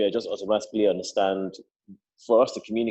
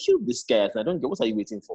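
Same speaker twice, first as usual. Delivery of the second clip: ordinary delivery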